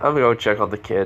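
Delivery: normal talking voice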